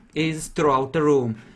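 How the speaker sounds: usual speaking voice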